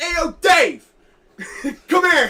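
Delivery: put-on very loud, high, drawn-out yell, Philadelphia accent. Retelling calling a supervisor across the floor: imitating own yell in Philly accent. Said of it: "literally yelled for the supervisor".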